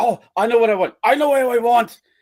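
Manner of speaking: mock eager, worked-up outburst, high and loud. Telling a genie joke, voicing the man in the back of the boat, acting out excitement. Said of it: "the guy in the back gets all excited".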